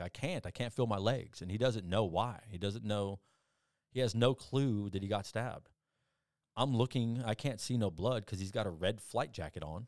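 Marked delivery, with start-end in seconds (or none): 0.0-1.4 long, slow, dragged, drawn-out half-shout. Retelling what the stabbed man on the ground yelled, imitating someone yelling. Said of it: "And he's yelling at me".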